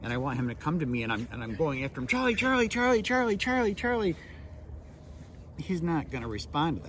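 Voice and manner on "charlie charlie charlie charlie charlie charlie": very high, loud shouts over and over. Speaker showing how not to call a dog back, yelling a dog's name. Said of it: "if I'm yelling at Charlie".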